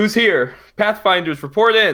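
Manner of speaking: high, calling shout. Leon can't see anybody and calls out for his team, shouting down a corridor. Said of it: "He's gonna shout down the corridor".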